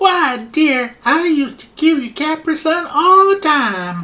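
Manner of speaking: very high, wandering, terrible put-on Southern US accent. Voicing a granny character who answers a question: put-on wandering Southern US accent. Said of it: "I don't know where my accent is going".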